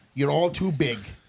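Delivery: ordinary talk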